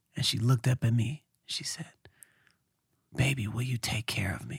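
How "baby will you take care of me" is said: soft, quiet, pleading tone. The speaker retells what a woman said while looking up at him, imitating her soft tone. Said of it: "soft tone".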